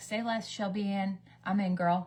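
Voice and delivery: ordinary talk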